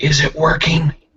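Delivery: very high, loud stage whisper. Voicing a character whispering back a reply: stage whisper. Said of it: "stage whispers back".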